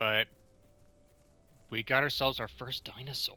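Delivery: hushed whisper. Player spotting their first dinosaur in the game, whispering. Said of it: "I don't know why I'm whispering".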